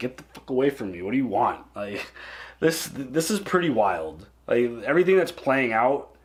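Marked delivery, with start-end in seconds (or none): 0.0-1.6 mock sarcastic, annoyed brush-off, lower. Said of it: "he's almost, like, sarcastic".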